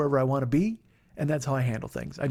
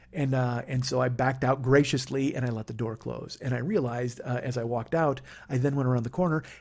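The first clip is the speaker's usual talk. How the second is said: ordinary talk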